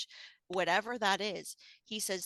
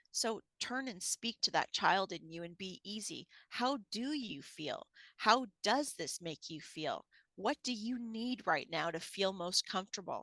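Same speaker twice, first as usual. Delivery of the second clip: usual speaking voice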